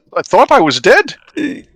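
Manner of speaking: very high, loud, swooping bad Swedish accent. Voicing Harshnag for the group, in a failed Harshnag voice. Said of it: "I can't do the voice at all".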